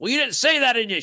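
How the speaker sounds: mock annoyed, snappy tone. Retelling how a sister snapped on the phone while stressed at work: imitating sister being pissy. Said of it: "she's all pissy".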